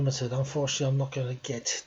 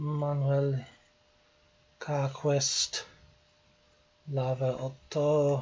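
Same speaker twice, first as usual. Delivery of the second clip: deliberate, very slow French pronunciation and accent. Reading out names while guessing a location: french accent. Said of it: "I apologise for my French accent".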